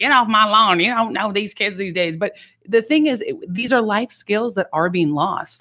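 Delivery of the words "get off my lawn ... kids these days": put-on cranky, crotchety, scolding old-lady voice. Complaining about young people's lost life skills: imitating an old crotchety lady. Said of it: "I sound like an old crotchety lady".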